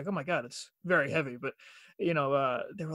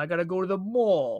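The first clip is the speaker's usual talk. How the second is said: imitated Long Island accent; 4 dB louder than usual. Showing the Long Island AW sound in a word: imitating a Long Island accent. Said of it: "the A W with a lot of the words".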